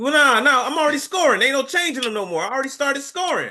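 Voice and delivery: very high yelling. Refusing to let a player change their answers after scoring began: yelling. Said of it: "You don't have to yell at me".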